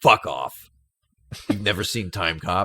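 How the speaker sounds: outraged, disbelieving, angry blurted outburst. Retelling a colleague's reaction to not having seen the film: imitating an angry colleague. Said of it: "He got really angry with me".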